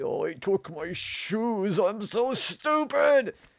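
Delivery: very high-pitched, drawn-out voice. Quoting a game character's insults: Cortex voice. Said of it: "He's like".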